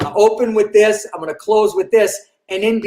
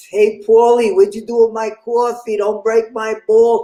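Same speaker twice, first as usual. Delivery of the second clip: put-on lazy New York accent, street talk style. Comparing New York and Boston ways of talking: put-on New York accent. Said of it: "it's two very distinct".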